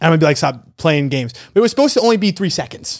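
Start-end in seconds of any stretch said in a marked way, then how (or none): none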